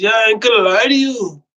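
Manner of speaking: put-on loose, boozy drunken talk. Recalling a worker who showed up drunk that morning: imitating drunk speech. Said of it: "Still talking like this".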